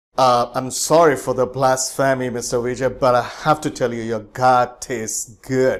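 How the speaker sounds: put-on sarcastic, satirical, tongue-in-cheek, faux-sorry tone. Retelling a dinner guest's joke before eating steak: imitating a sarcastic remark. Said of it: "he actually sarcastically".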